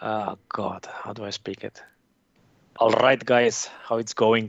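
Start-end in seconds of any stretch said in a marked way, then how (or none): 2.8-4.5 heavy, thick Eastern European accent. Saying a friend's tagline when asked for a thick Eastern European accent: Eastern European Jim impression. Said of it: "make it an Eastern European Jim".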